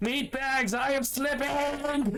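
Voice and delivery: yelling in an acted character voice. Voicing Zaxxas slipping from a ladder: yelling in character. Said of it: "You also hear Zaxxas yelling".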